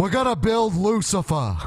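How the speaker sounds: put-on campaign-style politician voice, pitched very high. Answering a request to say the line in Bernie Sanders's voice. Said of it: "can someone say that in Bernie's voice?".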